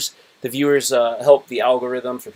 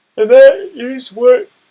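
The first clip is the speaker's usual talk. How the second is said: very loud, high speech through a yawn; 12 semitones higher, 11 dB louder than usual. Mid-monologue, the speaker apologizes afterwards for yawning while talking. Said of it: "Sorry for yawning".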